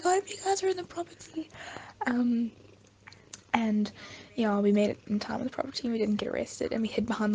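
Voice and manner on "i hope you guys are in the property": mock very high-pitched shouted call. Retelling how a mom shouted over a wall while they fled police, imitating someone shouting. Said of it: "shouting over the wall".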